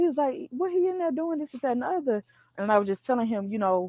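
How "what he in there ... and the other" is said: put-on pitched-up old man voice with New Orleans accent. Retelling what a security guard said: imitating an old New Orleans man. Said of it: "He was like a New Orleans old guy".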